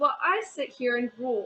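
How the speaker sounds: ordinary delivery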